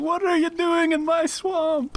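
high, slow ogre shout. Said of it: "I yelled, like".

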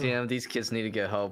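ordinary delivery

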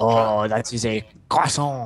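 put-on over-the-top French accent. Joking around with friends, the speaker puts on an outrageous French accent. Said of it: "my outrageous French person accent".

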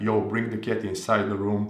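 ordinary delivery

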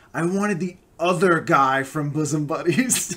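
really loud, slow, filling the room. Retelling a table read, imitating Bob Newhart saying it really loud. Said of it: "really loud so everyone can hear it".

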